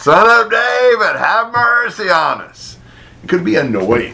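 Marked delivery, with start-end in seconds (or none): 0.0-2.8 put-on, high, long drawn-out bellowing cry. Acting out blind beggars crying out as the crowd shushes them: retelling a bellowing cry. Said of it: "bellowing out".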